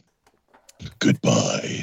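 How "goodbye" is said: very low, threatening, menacing voice. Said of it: "Now that sounded threatening".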